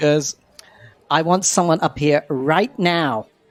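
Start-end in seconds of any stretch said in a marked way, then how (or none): 1.1-3.2 calm, slow, pitched-up voice with underlying anger. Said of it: "Madonna stands on stage very calmly".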